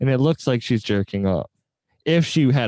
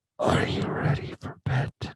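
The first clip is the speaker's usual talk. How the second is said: hushed, soft, breathy ASMR whisper. Describing accidentally clicking ASMR videos while trying to sleep, mock ASMR voice. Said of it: "half of them are A S M R".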